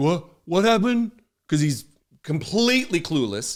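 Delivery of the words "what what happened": deliberately poor delivery with the voice pitched up. Mocking a politician asked about a judge's order: Trump impression. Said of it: "Donald Trump here, he's like".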